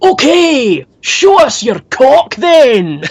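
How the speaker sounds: shrill, very high full-lung bellow, "okay" drawn out. Ending a concert story, quoting a man in the audience: retelling a full-lung shout. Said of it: "he shouts at the top of his lungs".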